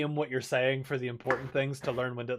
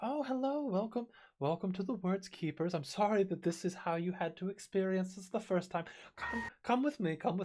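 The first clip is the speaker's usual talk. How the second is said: put-on nicest, sweetest little old lady voice, high; 6 semitones higher, 4 dB quieter than usual. Acting out a woman greeting newcomers, in a sweet old lady voice. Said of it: "in the nicest, sweetest old lady voice".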